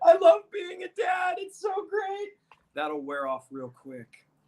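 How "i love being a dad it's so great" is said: put-on very high, drawn-out, slow, touchy-feely sappy gushing. Mocking another speaker's words about loving being a dad: mock touchy-feely gushing. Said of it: "that touchy-feely bullshit".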